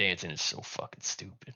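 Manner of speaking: barely voiced muttered whisper under the breath. A game master voices a man just told to beat it, muttering under his breath. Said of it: "he's just gonna mutter under his breath".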